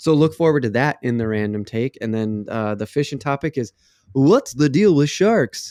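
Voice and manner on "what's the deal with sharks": quippy stand-up comic cadence, like a setup line. Announcing a podcast topic as a joke: Jerry Seinfeld impression. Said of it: "my best, uh, Jerry Seinfeld".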